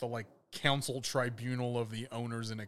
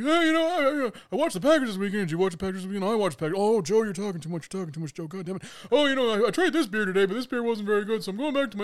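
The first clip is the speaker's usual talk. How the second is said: fast, high, nonstop babbling ramble with no gaps; 9 semitones higher, 9 dB louder than usual. Telling friends about a man who followed people around babbling: imitating his rambling cadence. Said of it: "at that speed and that cadence, that's how he talked".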